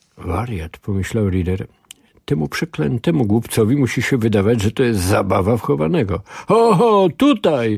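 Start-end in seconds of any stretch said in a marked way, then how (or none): 6.5-7.8 yelling, pitched very high and shrill. A fat man pointing his cane at a man he has spotted: yelling. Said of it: "Wrzeszczał mężczyzna".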